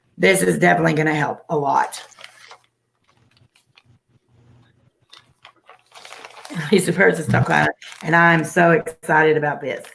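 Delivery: voice giving out. Thanking people for sending gifts to help, voice going out. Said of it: "I sound even manlier".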